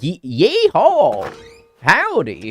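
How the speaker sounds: put-on British accent. Imitating how a British person would say a cowboy greeting: imitating a British person saying yeehaw. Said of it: "It's like if a British person said".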